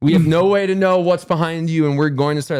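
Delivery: high, barked, shouted yelling. Retelling being yelled at while hiding behind a blanket: imitating someone yelling. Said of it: "they're yelling".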